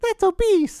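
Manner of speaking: very high, cutesy, squeaky little voice. Retelling what the Nintendo said when the speaker got on it, squeaky Nintendo voice. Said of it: "squeaky voice".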